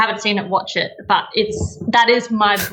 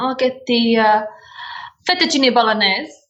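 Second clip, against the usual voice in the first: put-on Italian accent; 3 semitones higher than usual. Retelling the brother ordering at restaurants: imitating a put-on Italian accent. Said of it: "he turned on the accent just to say the food".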